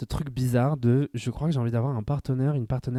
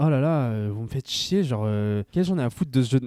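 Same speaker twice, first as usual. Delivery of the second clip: ordinary delivery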